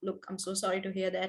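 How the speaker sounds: soft, sad. Explaining pitch, demonstrating offering condolences; lowered voice. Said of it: "You sort of lower your voice".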